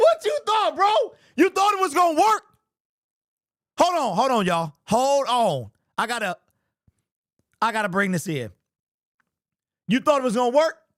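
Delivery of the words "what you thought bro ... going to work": shrill, high-pitched, full-on yelling. Talking to the audience after staying calm all game, now yelling. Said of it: "and then now I'm yelling".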